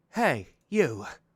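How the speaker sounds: put-on sparrow voice. Recalling the voice once given to a sparrow character in the game: put-on sparrow character voice. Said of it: "What was the voice that I gave this character".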